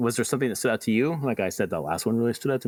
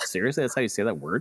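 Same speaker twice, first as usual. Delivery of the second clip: ordinary delivery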